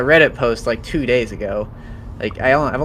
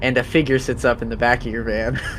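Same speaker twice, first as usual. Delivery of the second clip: usual speaking voice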